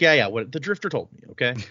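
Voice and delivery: ordinary talk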